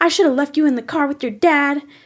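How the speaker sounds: mock shrill, loud screaming voice. Retelling a lady at Walmart screaming at her kid: imitating a mother screaming. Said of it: "screaming at her kid".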